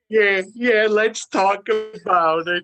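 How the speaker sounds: put-on loud, high-pitched old man voice. An actor asked about his upcoming role answers in the Grandpa Munster voice. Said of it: "is that the Grandpa Munster voice right there?".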